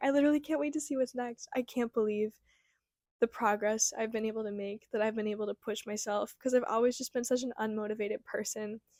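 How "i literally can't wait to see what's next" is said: tearful, breaking, pitched-up crying voice. Reflecting on personal progress and what comes next, crying. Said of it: "Why am I crying?".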